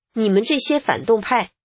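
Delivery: ordinary talk, nothing marked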